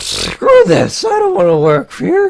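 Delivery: deliberate, very high voice crack. Recalling the moment he decided to quit, the speaker retells it with an intentional voice crack. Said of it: "That was intentional voice crack".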